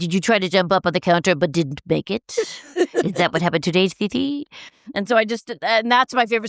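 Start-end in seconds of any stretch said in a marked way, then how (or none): 0.0-4.5 put-on doting, cutesy pet-talk voice. Retelling coming home and greeting the cat, talking to the cat. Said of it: "that's how I used to talk to my cat".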